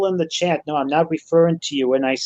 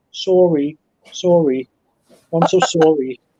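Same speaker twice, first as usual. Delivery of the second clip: put-on polite, apologetic Canadian accent; 4 dB louder than usual. Retelling what people in Toronto say when bumped into; Canadian accent. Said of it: "in their Canadian accent".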